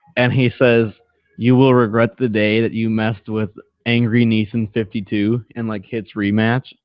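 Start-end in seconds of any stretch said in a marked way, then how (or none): none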